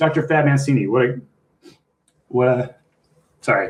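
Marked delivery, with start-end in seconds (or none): 0.0-2.8 choked up, voice catching and breaking with emotion. Thanking the people who helped along the way: choked up with emotion. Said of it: "I get too choked up on these".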